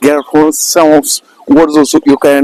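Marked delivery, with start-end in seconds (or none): none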